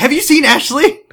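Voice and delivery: frantic, shrill, very high. Retelling how a show character returns asking after Ashley: imitating someone panicking.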